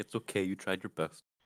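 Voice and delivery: very quiet, under-the-breath muttered aside. Speaking as a character while a rope is pulled back by hand: muttering under breath. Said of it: "just under my breath".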